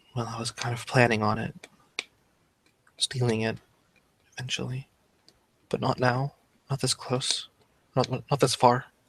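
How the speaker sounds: muttered under breath. A game narrator voices a character's reluctant reply: muttered under her breath. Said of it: "says under her breath".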